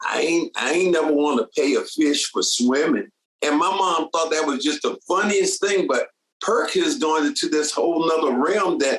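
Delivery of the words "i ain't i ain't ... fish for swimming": put-on down-home country accent. Retelling a line from a guy his mama was watching, in a country accent. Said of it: "he had a country accent".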